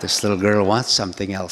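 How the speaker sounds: ordinary talk, nothing marked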